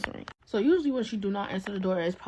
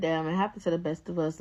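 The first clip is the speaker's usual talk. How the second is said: normal talking voice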